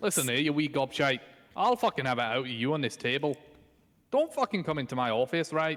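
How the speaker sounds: clearly faked Scottish accent. Mid-chat with a friend, suddenly launching into a rant in a put-on accent. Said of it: "What is this accent?".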